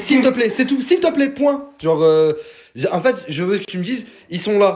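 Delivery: high, loud, demanding tone.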